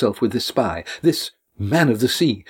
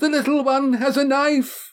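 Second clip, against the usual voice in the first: very high, shrieking scream; 14 semitones higher than usual. A woman in a crowded hall sees someone holding a knife, screaming. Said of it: "Janice screamed".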